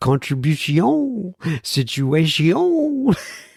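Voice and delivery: cartoonish, high, swooping fake French accent. Told their French is cartoonish, the speaker shows it: Pepe Le Pew French accent. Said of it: "French that I, I practice".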